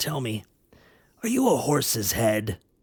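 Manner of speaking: croaky, croaking clownish voice. Narrator reading a story voices the clown's question in a croaking voice. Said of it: "croaked the clown".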